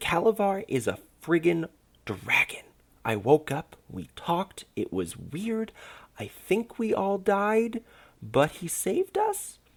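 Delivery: very high, rising, everything blurted out. A party member tells the waking group what happened, blurted out. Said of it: "With each exhale a warm breeze seemed to creep over the gnome's skin and bright red hair. / With each exhale a warm breeze seemed to creep over the gnome's skin and bright red hair. / [name] stammered".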